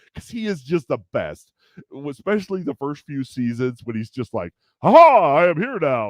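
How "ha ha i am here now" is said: booming, slow, belted-out heroic cartoon voice. Praising a favorite character's early seasons, the speaker does an All Might voice. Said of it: "I try and try and do this horrible uh, you know, voice".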